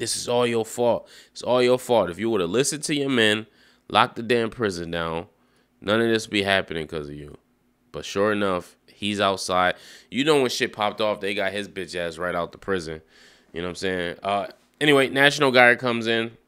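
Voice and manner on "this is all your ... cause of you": usual speaking voice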